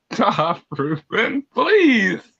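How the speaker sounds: talking through laughter. Begging another player to stop while laughing at the game: laughing while talking. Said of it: "I I'm broken right now".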